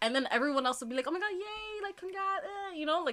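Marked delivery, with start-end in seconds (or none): 1.1-2.4 play-acted, high, upbeat, cheery voice. Imitating everyone else congratulating someone: imitating cheery congrats. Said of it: "all cheery".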